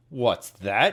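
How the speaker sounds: terribly gruff, deep, growling bear voice. Reading a story aloud as the bear answers the rabbit, gruff growling voice. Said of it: "Growled a voice that was terribly gruff".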